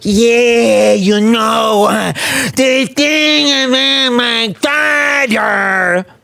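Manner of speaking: put-on Italian-American accent. Mocking how another speaker talks: mocking Italian-American accent. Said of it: "and I don't go".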